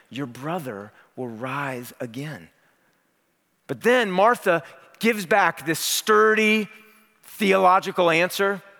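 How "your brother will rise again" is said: tender, very soft, very quiet delivery. Retelling Jesus's answer to the grieving sister: Jesus speaking tenderly, acted out.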